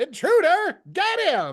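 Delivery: very high, wild, swooping alarmed shout. Game master voicing Radagast as the players wake to a ruckus: Radagast shouting. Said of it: "you hear Radagast shout".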